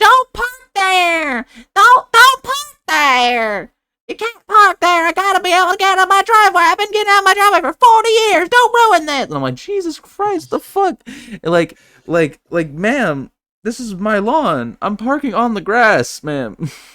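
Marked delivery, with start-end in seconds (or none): 0.0-9.3 very high, shrill, furious woman's yelling. Retelling a woman shouting from her porch window about parking; imitating a woman yelling. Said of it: "starts yelling at me from her second story window".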